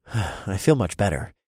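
plain

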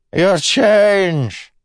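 piercing screech, very high, very loud, drawn out. A beggar calls after a lord who is walking away, screeching. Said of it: "the beggar screeched".

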